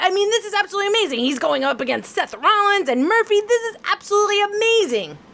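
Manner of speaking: fake over-the-top excitement. Answering the question again after being told to sound happy: fake over-the-top excitement. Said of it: "Is that better?".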